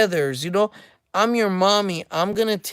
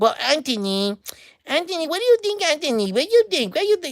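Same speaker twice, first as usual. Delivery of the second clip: put-on grown man's high little-boy voice; 8 semitones higher than usual. Describing how a man who used to visit talked to them: imitating Tito's little-boy accent. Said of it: "they have like a little boy accent".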